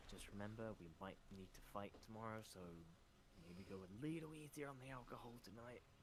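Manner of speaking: quiet, hushed half-whisper. In a tabletop game, the character half-whispers to Peter and Athos, quiet half-whisper. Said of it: "I do whisper quietly to Peter and Athos".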